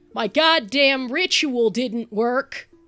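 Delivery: yelling loudly. Roleplaying a bleeding character who turns pointedly, yelling at the ceiling. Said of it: "start yelling at the ceiling".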